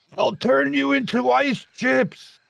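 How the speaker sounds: very high-pitched, rough, furious raging bellow. Narrating a fight, the speaker voices Grogshak charging the frostworm: Grogshak bellowing. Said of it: "He bellows".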